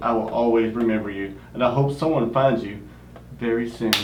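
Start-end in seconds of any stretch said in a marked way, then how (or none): none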